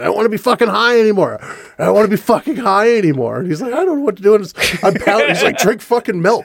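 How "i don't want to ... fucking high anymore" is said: play-acted, reined-in, mild half-scream. Retelling screaming at someone after two days on ecstasy: retelling own screaming. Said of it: "I just started screaming at Brian".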